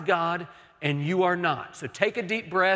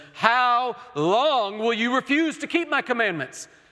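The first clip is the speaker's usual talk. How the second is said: weary, fed-up, exasperated, pitched-up voice; 5 semitones higher than usual. Voicing god speaking to the people after the seventh-day gathering, acting out god exasperated. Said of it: "in an exasperated tone".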